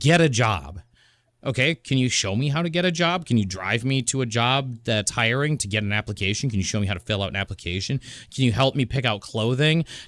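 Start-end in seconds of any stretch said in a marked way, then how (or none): 0.0-0.8 shouting voice. Recalling being seventeen, the speaker quotes his dad; imitating a dad yelling. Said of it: "He's just yelling at me".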